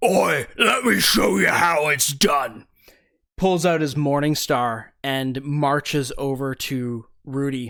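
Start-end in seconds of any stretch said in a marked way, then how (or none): 0.0-2.7 big, loud brute bugbear monster voice. Narrating a fight, the speaker voices the larger bugbear: bugbear monster voice. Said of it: "the larger bugbear".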